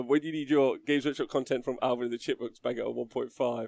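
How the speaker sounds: ordinary talk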